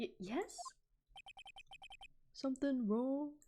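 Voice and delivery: dopey put-on dude voice. Voicing a man to make him sound like an idiot: put-on idiotic dude voice. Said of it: "let's see if I can do a dude voice".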